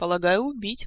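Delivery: plain reading voice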